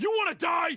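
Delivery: loud, high, furious, angry voice.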